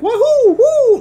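loud, very high, belted-out whoop. Imitating loud game sound effects heard in public: Mario voice. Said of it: "playing Mario sound effects loudly".

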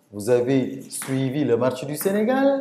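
rising question intonation on Sénégal. Showing how tone alone turns a statement into a question: questioning intonation. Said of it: "j'utilise la tonalité, le ton pour poser une, caisse, une question".

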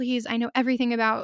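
pleading, begging tone. Retelling asking record store staff for a job: retelling own begging. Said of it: "I begged the people".

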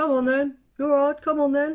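loud, high taunting shout. Retelling being woken by lads outside a pub: imitating lads shouting. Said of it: "a battle of who could shout".

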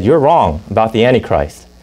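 ordinary talk

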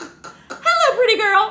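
very high, very loud, shrill talking-bird voice. Retelling what the caged bird said when it was first heard talking: imitating Killer the talking bird. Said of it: "he goes".

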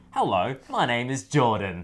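slow, unhurried, laid-back, chill tone. Greeting the viewers in place of the usual guest: Jordan impersonation. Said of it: "my best, uh, Jordan impersonation".

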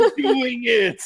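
acted tearful cheering. Cheering on another player's character, in character: in-character crying. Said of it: "in character, I am crying".

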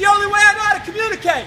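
loud, high-pitched yelling. Yelling for no reason as the only way to communicate: yelling. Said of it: "I'm yelling for no reason".

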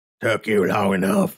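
rough, gravelly barked voice. A narrator reads a ghoul calling out from beyond a door, gravelly bark. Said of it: "a gravelly voice barked".

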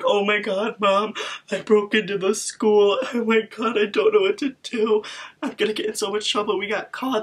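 high-pitched bawling and sobbing, acted out. Retelling breaking into school, the speaker acts out crying to mom. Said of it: "I'm literally just bawling my eyes out".

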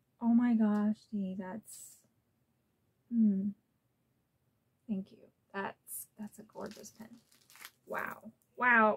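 overwhelmed, overcome with emotion. Opening a gift pen on camera and thanking the sender, overwhelmed with emotion. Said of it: "Get it together, girl".

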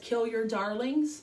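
ordinary talk

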